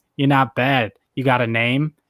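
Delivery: ordinary delivery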